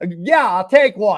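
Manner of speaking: put-on heavy, laid-on Boston accent. Retelling his own reply to a bartender, in a full boston accent. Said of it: "Full Boston accent".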